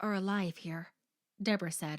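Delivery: plain reading voice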